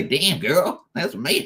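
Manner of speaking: exaggerated put-on American accent. During a Hex update, a Kiwi speaker does a bad American accent impression. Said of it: "a Kiwi's bad impersonation of a bad American version accent".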